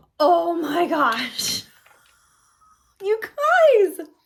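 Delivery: high, swooping over-dramatic build, drawn-out "guys". Reviewing a Stay Fresh scent for viewers, reacting to it: over-dramatic. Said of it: "I know I sound a little over dramatic".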